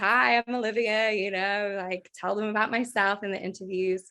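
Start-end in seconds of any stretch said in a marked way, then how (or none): 0.0-1.1 booming, big, full-out loud voice. Recalling following her mom's advice for interviews, in a big loud voice. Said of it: "big loud voice".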